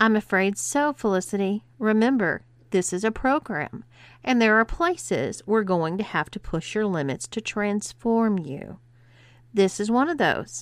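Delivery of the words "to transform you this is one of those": ordinary delivery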